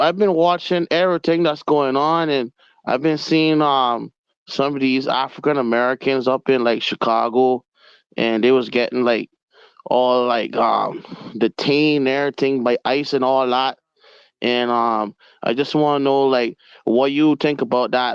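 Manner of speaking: normal talking voice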